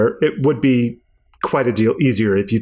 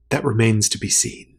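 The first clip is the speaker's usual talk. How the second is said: hushed, barely voiced whisper; 3 dB quieter than usual. Voicing a character who whispers a reply back: whispering. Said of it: "She whispers back to you".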